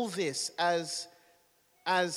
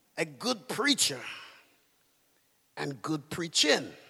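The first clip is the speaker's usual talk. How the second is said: put-on man's voice, pitched lower; 2 semitones lower than usual. Retelling a man's answer about good preachers, the speaker imitates his voice. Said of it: "I'm trying to do his voice".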